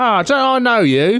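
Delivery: high, slow cockney cab driver voice. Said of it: "Does he really talk like that?".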